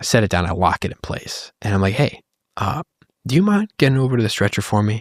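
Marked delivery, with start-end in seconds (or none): 1.9-5.0 calm, courteous, nice tone. Retelling asking a young woman onto the stretcher, retelling a nice calm voice. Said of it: "And just a nice, calm voice".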